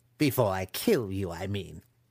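ordinary delivery

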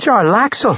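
very high-pitched, sudden blurted word. Narrating a woman cutting into a conversation with a guard, blurted out. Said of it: "Amber Gree blurted".

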